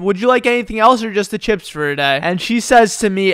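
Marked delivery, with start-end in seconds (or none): none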